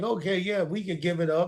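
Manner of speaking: put-on emotionless delivery. Imitating the other speaker's words back at him: imitating a heartless flat tone. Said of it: "but you said it like".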